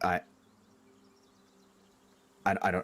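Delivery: nervous, stuttering, stammering speech. Voicing a character confronted with an intimidation roll: stammering. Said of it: "he just kinda stammers and, like, stutters".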